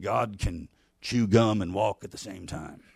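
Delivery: low, soft put-on Texas accent. Retelling a conversation, the speaker quotes what a man said to him, in a texas accent. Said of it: "kind of his typical Texas accent".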